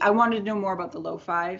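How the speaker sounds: ordinary talk, nothing marked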